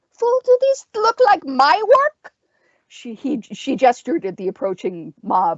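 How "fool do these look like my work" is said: very high, spitting, snarling witch voice. Narrator reading a story, voicing the witch answering the leader: snarling witch voice. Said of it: "The witch snarled".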